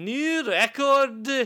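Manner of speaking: imitated thick Scottish accent. Retelling a game announcer's line as heard in a heavy scottish accent: imitating a heavy scottish accent. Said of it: "with a very heavy Scottish accent".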